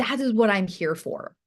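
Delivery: ordinary delivery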